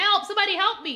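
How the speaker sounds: play-acted, high, loud screaming cry. Retelling a movie scene of a man locked in a bathroom, imitating his screaming. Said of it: "he he's screaming. He's like".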